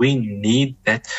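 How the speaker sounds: we need that said slowly with heavy stress. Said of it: "I emphasize this word".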